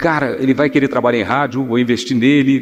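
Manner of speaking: ordinary talk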